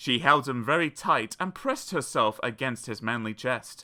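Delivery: plain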